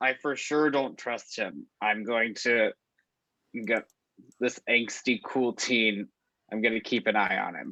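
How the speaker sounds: very low mutter under the breath. A player's character speaks about a teen, hoping he can't hear: muttered under breath. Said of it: "I kind of like under my breath".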